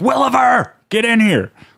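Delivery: furious, very high-pitched angry yell. Describing a stock movie character, the angry police chief: imitating an angry chief yelling. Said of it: "yells constantly about paperwork".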